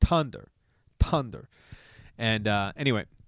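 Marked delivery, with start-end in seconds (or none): 0.0-1.5 put-on Italian accent, Tunder said with a hard t. Retelling what the italian soccer coach would say: italian accent. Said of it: "he was Italian and he had this accent".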